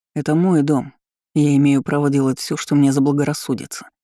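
ordinary delivery, nothing marked

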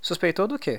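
eager, keen, excited voice, high-pitched. Narrator reads a character questioning the forest grandfather, excited question. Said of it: "Perguntou excitado".

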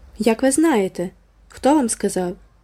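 let-down, crestfallen, disappointed cry. Anne, disappointed her big secret was guessed, exclaims to Miss Lavendar. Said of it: "вигукнула Ен".

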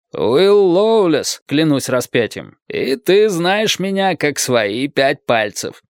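contemptuous, scornful, disdainful tone. Answering the sentries' commander's challenge at the bridge: contemptuous. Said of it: "ответил Растрига презрительно".

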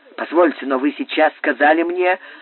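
plain reading voice

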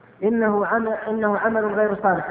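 ordinary talk

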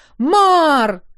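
loud, high, stretched-out shout. A searcher outside the castle calls out for Mar, shouting a name. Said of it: "Чего орешь?".

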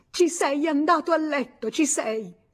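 shrill, loud shout. A woman knocked to the floor turns to the man who hit her, shouting. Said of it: "gli gridò di nuovo".

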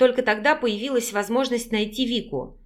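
ordinary delivery

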